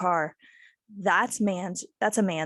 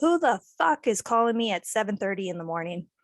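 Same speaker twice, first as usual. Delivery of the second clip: ordinary talk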